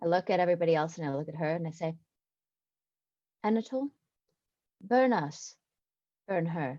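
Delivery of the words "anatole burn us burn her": fairly quiet, soft voice, kept low but audible. Looking at everyone else, then at her, loud enough for her to hear: kind of quietly. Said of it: "kind of quietly".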